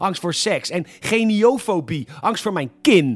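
shouting.

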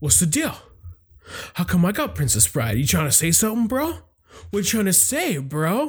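put-on defensive, macho tough-guy voice, insecure bravado. Retelling own past words to his mom: imitating macho insecure tone. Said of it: "I just got all macho and insecure".

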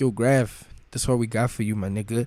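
ordinary talk

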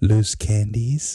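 slow, creepy, drawn-out offering voice.

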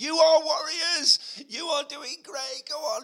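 mock shrill, very high, loud cheering shout. Retelling cheering on runners at mile twenty-five: imitating someone shouting. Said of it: "Laura shouted for a thousand people".

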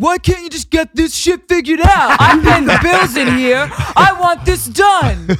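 very loud, very high-pitched, shrill voice. Retelling a call to a credit card company, imitating boyfriend's voice. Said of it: "when I'm imitating you".

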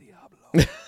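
very loud stage whisper for effect. Retelling a cop car with a 666 plate passing: retelling a whisper. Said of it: "and I just whisper".

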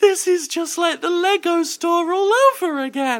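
mock very high, loud, tearful sobbing. Retelling what she said walking back to the car: imitating someone crying. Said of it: "still crying, she just goes".

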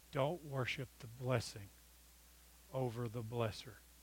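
slow, deliberate, each word placed carefully. Repeating a point about the Kings text to listeners: said again slowly. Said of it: "I'm going to say that again slow".

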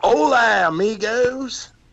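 put-on cartoon character voice speaking in Spanish. Imitating a character speaking Spanish in a park: Mater doing Spanish. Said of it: "'cause Mater doing Spanish".

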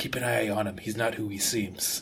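very soft, low half-whisper, close in. In a role-play scene, speaking into someone's ear, half-whispering. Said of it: "I'm whispering into Tori's ear".

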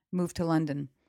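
normal talking voice

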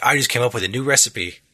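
put-on British accent. Retelling what the party's cook says in the game: Ignis voice. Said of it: "I like the British guy".

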